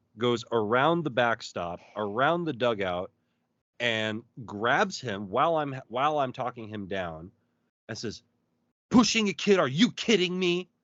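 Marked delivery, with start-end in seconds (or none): 8.9-10.7 mock furious, high-pitched angry scolding. Retelling how a mom grabbed a boy and tore into him: imitating an angry scolding. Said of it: "just starts tearing into him".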